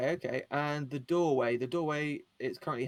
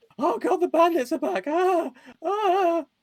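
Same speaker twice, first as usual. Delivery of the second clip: shrill, booming, very high panicked scream; 9 dB louder than usual. A player's character runs in with news of bandits, screaming in panic. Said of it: "I'm just screaming my head off".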